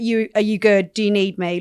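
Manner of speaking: usual speaking voice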